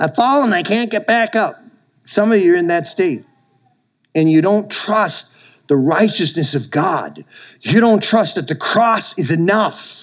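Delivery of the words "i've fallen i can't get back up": put-on high, cranky, cantankerous baby voice. Telling listeners about Steve Urkel, do his line in Steve Urkel's cantankerous baby voice. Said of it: "he just had this cantankerous baby voice".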